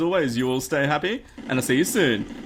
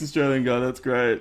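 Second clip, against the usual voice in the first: ordinary delivery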